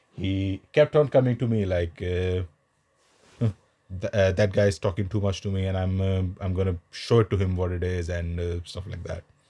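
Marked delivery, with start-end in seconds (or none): none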